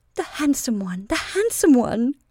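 trembling, quavering voice, wavering words that fade away. A woman calls out, her voice quavering and dying away. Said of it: "Her voice quavered and died".

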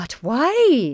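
sunny, cheery tone, stretched "why". A nurse questions a remark at the table, beaming. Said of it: "beaming through her glasses".

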